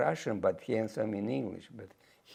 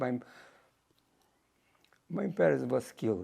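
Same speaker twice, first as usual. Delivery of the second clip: tearful, weeping; 2 semitones higher than usual. Speaker recounts talking with their father and mother, crying.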